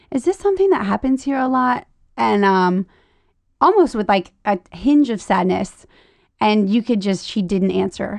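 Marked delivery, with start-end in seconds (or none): 0.1-1.8 mock-calm cool voice, higher and faster. Speaker retelling how they questioned a woman, asking calmly and coolly. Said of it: "I asked her so calmly and coolly".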